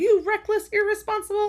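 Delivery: very high-pitched, shrill, scolding yell. Retelling a book scene where a rider yells: imitating Violet yelling. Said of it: "Violet starts yelling".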